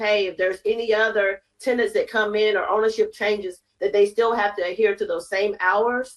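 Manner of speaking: ordinary talk, nothing marked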